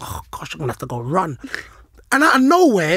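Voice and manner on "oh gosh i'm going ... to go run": low, quiet muttering under the breath. Retelling sitting out a lost game, imitating own mumbling. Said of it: "I'm mumbling to myself".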